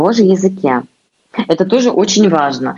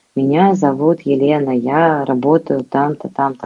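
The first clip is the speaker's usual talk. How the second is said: flat monotone, one unchanging tone throughout; 3 semitones lower than usual. Showing what monotonous speech sounds like: monotone, one flat tone. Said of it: "вот монотонность".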